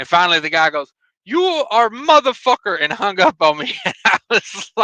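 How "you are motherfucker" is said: put-on very strong Indian accent, higher pitch. Retelling what a spam caller said before hanging up, in a strong indian accent. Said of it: "David with a very strict or very strong uh, Indian accent".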